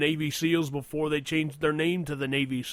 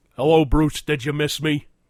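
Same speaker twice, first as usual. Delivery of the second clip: loud, put-on gruff wrestler voice; 9 dB louder than usual. Doing a phone-style bit to Bruce as Jesse Ventura: Jesse Ventura impression. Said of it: "It's Jesse Ventura".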